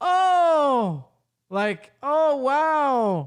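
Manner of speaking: stiff very slow line reading. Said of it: "this doesn't sound convincing at all".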